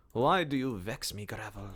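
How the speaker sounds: really bad, vague put-on German accent. Addressing the gravel, the speaker uses a really bad put-on accent. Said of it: "I don't know what kind of accent that's supposed to be".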